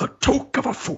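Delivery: sage, storybook wizard voice. Showing the lowest voice, doing a line as Gandalf. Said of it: "Gandalf from Lord of the Rings".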